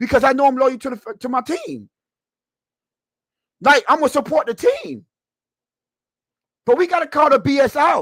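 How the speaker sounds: animated, passionate delivery. A fan ranting to his audience about his team, animated and passionate. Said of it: "I'm being so animated right now".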